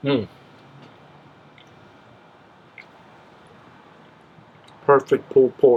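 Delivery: talking with a full mouth. Tasting pulled pork just cooked, talking with mouth full. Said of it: "Don't mean to be talking with my mouth full".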